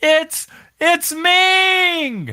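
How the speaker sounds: very high, excited put-on commentator yell, "Ming" drawn out. Imagining the commentator calling the entrance: Tony Schiavone yelling. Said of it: "letting Tony Schiavone yell".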